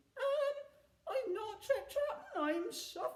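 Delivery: very small voice. A troll pushed onto the pirates' plank answers a jeering question, in a very small voice. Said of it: "said the troll in a very small voice".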